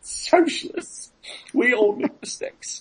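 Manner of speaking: breathy, whispered put-on voice. Talking about the movie Clue, doing a Tim Curry impersonation. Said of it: "That was my Tim Curry impersonation".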